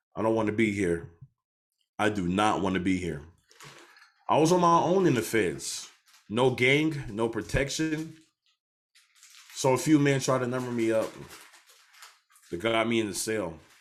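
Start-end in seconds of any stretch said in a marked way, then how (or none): 0.2-3.2 tearful, crying, pleading voice. Retelling calls to mom from prison: imitating own past crying. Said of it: "I was calling my mom crying like".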